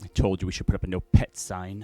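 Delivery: muttered under breath. Game narrator voicing someone overheard as players walk out, muttered under breath. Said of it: "say under their breath".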